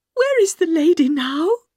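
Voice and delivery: high, quavering, trembling, shaken voice. The little governess asks where the lady is now, shaking violently. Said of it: "shaking so violently that she had to hold her handkerchief up to her mouth".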